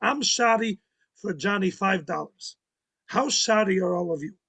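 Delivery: put-on speaking with Yiddish accent. Quoting Zayda speaking to a group lamenting Johnny's burned farm, Yiddish accent. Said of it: "his Yiddish accent".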